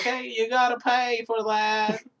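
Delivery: very high, slow, dim-witted, dopey drawl. Retelling a movie scene, imitating a dumbass gas station worker. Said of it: "And he's like".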